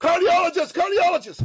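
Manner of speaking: loud eager high voice.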